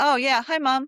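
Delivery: acted, unexcited, indifferent dog voice. Voicing a dog lying down as its owner comes home: voicing an unexcited dog lying down. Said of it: "Or are they laying down going".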